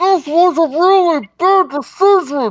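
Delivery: muffled-sounding voice. Playing the one being carried like a teddy bear, in a muffled voice. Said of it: "In a muffled voice".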